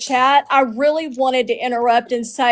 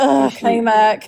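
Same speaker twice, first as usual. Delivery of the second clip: muttering under breath; 2 semitones lower than usual. Retelling how the panel host said their name: imitating someone muttering under her breath. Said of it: "under her breath".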